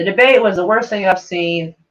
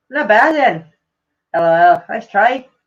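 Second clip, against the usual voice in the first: slow, amateurish put-on Scottish accent. Reading out what a Scottish commenter wrote: reading in a Scottish accent. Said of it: "so the Scottish guy goes".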